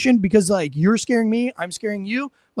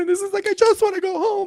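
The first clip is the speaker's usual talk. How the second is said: sobbed out, tearful crying through tears; 10 semitones higher than usual. Retelling how someone broke down during an argument, acting out his complaint in an imitation of crying. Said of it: "he starts to cry".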